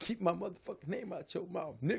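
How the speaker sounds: put-on high, tough gangster talk. Quoting a warning one man gave another to keep his name out: put-on gangster voice. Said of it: "Getting gangster on him".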